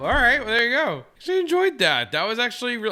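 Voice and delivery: very high, unusual, swooping talking voice. Reacting right after someone finishes reading a scene aloud: talking unusually high. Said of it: "I don't know why I'm talking so high".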